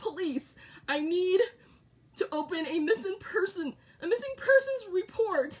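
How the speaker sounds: play-acted tearful, crying, pleading voice. Retelling a call to the police about a missing son: imitating own crying plea. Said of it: "I'm crying on the phone and I'm like".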